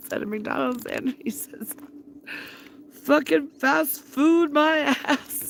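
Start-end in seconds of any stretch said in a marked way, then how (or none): 2.9-5.5 put-on loud, slow, very strong Scottish accent. Quoting a man who stepped out of McDonald's, in a very Scottish accent. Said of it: "very, very Scottish accent".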